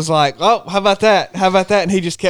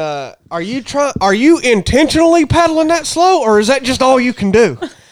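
mock yell, much higher pitched; 6 semitones higher than usual. Asked what Chad was hollering, the speaker retells his words: imitating Chad yelling. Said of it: "He was yelling".

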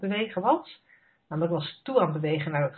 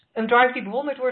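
quick, mildly sarcastic tone, pitched up; 7 semitones higher, 3 dB louder than usual. Talking about their past drive, the speaker repeats the phrase with some sarcasm. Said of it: "je hoort al dat ik het met enig sarcasme zeg".

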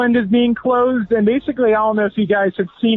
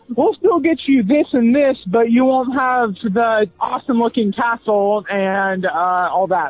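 usual speaking voice

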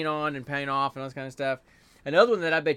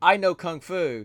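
put-on Turkish accent, higher and louder; 4 semitones higher, 5 dB louder than usual. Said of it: "with that accent".

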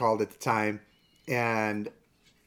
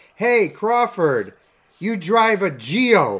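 very loud, high-pitched, taunting heckling yell; 9 semitones higher, 9 dB louder than usual. Retelling a man heckling Carl Crawford, retelling a heckler's yell. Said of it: "he's just yelling at Carl Crawford".

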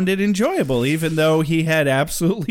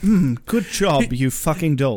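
mock exasperated tone; 3 semitones lower than usual. Imitating a character's exasperated reply. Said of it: "He was so exasperated".

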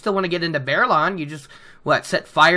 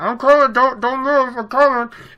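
mock distant muffled shouting, higher; 7 semitones higher, 4 dB louder than usual. Retelling a man running down to open the gate, imitating muffled shouts. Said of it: "Rand can hear his muffled shouts".

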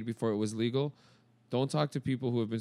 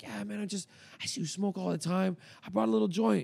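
mock whisper, higher; 9 semitones higher than usual. Retelling how a neighbor walked up and spoke: imitating someone whispering. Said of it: "he kind of started whispering".

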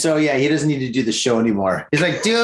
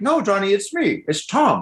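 mock cartoon father voice; 5 semitones higher than usual. Retelling a phone call, the speaker quotes the caller: King of the Hill dad voice. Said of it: "He sounds like the dad from like King of the Hill".

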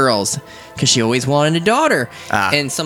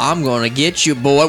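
put-on Southern US accent, twangy. Talking about dealing with southern people, a speaker doing a southern twang. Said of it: "The southern twang".

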